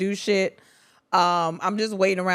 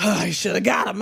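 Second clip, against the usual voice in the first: mock hyperventilating, heavy panting. Imitating another speaker after a game: imitating hyperventilating after a game. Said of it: "You be breathing so hard".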